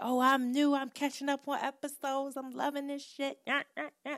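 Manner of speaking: high, gushing new fan voice. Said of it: "new people come through and say".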